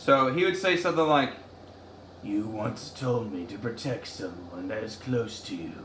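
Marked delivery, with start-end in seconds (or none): 2.2-5.7 character voice, very low and kept soft. Speaker does an impression of something Gara would say, in Gara voice. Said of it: "here's my impression of Gara".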